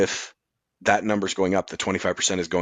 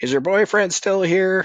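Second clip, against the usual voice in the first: put-on very high-pitched mother's hollering voice; 11 semitones higher, 3 dB louder than usual. Riffing on what kids do these days, imitating a mom yelling down. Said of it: "their mom yells down".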